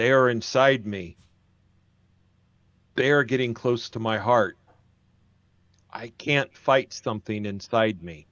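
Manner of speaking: rumbling, slow delivery. Voicing a living stone mountain addressing the group, slow, rumbling voice. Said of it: "a slow, rumbling voice says".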